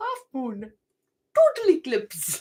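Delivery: clumsy put-on Indian accent, sing-song. Recalling a line from a Jaffa cakes advert: not very good Indian accent. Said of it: "I don't know why I sounded Indian there".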